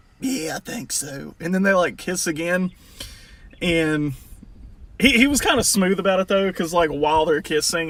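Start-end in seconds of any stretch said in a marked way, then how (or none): 0.2-1.4 put-on breathy voice, quieter and slower. Retelling a proposal, quoting the man's reply between kisses: imitating a breathy voice. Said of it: "he's got that breath to his voice".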